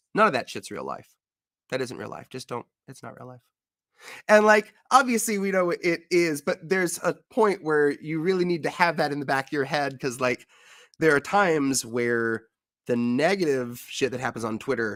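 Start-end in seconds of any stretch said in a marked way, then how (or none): 0.1-3.4 mock deadpan, rattled off completely dry. Retelling what someone once said, imitating a deadpan delivery. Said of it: "just so deadpan".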